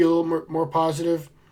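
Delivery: normal talking voice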